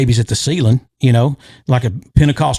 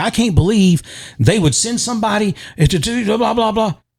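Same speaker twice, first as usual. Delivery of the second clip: mock pissed-off, indignant, fuming venting, pitched up; 8 semitones higher than usual. Retelling what a man said afterwards: imitating a fuming man. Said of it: "he's fuming. He's pissed".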